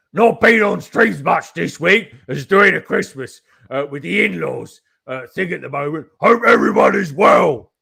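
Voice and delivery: very loud, shrill voice. Reading a chat message aloud, imitating Carrie's voice. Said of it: "that's my impression of Carrie".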